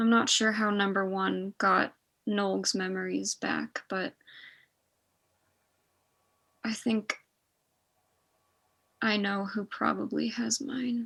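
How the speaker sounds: very soft, hushed voice. Voicing a character who answers after a quiet moment: very soft voice. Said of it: "very softly".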